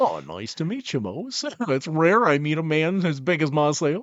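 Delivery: goofy, silly cartoon voice, high and swooping. Role-playing, replying to a character named Mose, in a Goofy voice. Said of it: "now I just want to do a Goofy voice instead".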